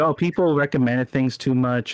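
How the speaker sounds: ordinary talk, nothing marked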